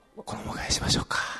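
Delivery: hushed whisper. Speaking to the group in a discussion, whispering. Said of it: "なんでひそひそなの".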